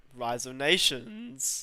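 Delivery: voice breaks and cracks while speaking. Listing games they play, the speaker names one with their voice cracking. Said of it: "that voice crack".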